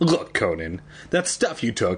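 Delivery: ordinary talk, nothing marked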